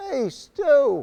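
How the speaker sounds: high, loud hollered call. Retelling how a man turned toward the group and called to them: retelling a yell. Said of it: "he yells out".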